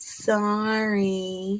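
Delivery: dismissive, condescending, drawn-out sorry. Demonstrating how the word can sound: condescending sorry. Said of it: "It kind of sounds condescending".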